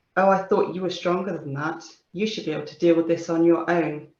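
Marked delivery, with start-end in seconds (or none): none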